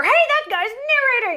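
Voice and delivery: surprised yelling, high and loud.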